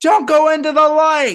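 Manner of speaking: very high, very loud screaming. Recounting a performer's bit, retelling how he screams a line. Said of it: "and he screams".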